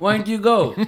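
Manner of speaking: very loud distant yell. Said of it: "You're just yelling, like, two feet away from the mic".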